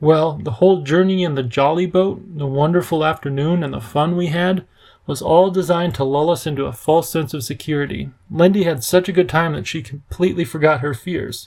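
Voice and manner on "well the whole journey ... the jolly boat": plain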